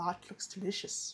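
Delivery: put-on old-fashioned vampire count voice. Retrying a character's line with more of a Count Dracula sound. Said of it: "more of a Count Dracula sound".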